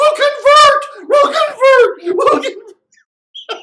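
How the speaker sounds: very high, loud, desperate pleading. Describing people who surrendered on their knees, imitating their desperate begging. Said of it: "they're on their knees, going like".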